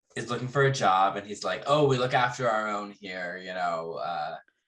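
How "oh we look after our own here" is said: usual speaking voice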